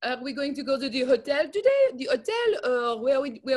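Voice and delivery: accent from French. Show off your impression for the other speaker: a French person speaking English. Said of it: "I do a good French person speaking English".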